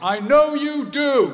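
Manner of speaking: very loud, high, carrying voice. Speaker retells their dad calling after them as they leave the hospital ward, loud voice. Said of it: "in a loud voice".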